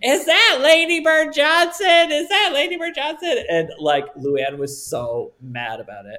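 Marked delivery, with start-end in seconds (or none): 0.0-3.4 mock very high, loud, obnoxious drunken yelling. Retelling how a drunk obnoxious friend kept yelling about someone nearby: retelling a drunk friend's screaming. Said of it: "my drunk obnoxious friend kept screaming".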